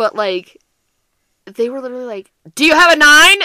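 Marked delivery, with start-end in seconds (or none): 2.6-3.3 put-on shrill, very loud, excited kid yell. Describing the kids' intense Go Fish game, parent imitates a kid yelling. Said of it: "why are you yelling?".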